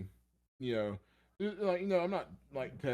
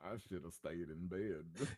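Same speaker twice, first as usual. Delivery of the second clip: cartoonish dog character voice; 5 semitones lower, 8 dB quieter than usual. Imagining how a man who dropped his pizza felt: Droopy the dog voice. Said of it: "the voice of Droopy the dog is like".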